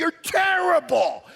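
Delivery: loud, shrill, very high-pitched outburst. Retelling yelling at a player who dropped the ball: imitating his own yell. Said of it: "And I yell".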